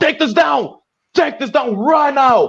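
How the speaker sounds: screamed delivery.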